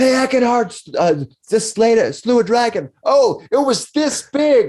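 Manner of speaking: loud, shrill, high-pitched, obnoxious hollering. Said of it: "they start yelling at each other loud, obnoxiously".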